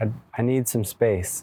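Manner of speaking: usual speaking voice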